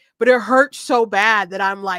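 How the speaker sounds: ordinary delivery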